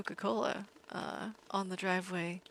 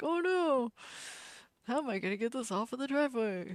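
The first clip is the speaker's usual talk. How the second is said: put-on elderly old man voice; 4 semitones higher than usual. Retelling his worry about oil leaking on the driveway, put-on old man voice. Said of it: "You like my old man voice?".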